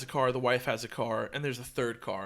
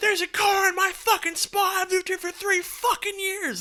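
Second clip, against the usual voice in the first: mock very high, shrill screaming rant; 5 dB louder than usual. Retelling the drunk neighbor's complaint about her spot: imitating a drunk woman yelling. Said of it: "she starts yelling and screaming".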